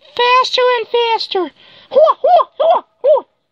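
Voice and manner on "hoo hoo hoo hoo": loud, high, belted kung fu cries. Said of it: "perform the kung fu moves".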